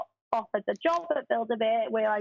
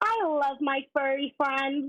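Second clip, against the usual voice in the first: put-on talking-toy voice, higher pitch; 4 semitones higher than usual. Performing a talking Barbie bear's saying after being asked for one: Barbie bear voice. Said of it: "the one that I can probably do the best, she goes".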